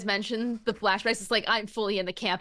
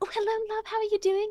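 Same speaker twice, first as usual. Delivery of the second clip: very high, gentle, sweet voice; 11 semitones higher than usual. Imitating an actor's gentle manner after meeting him: imitating Jason Isaacs, gentle. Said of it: "he's always just like".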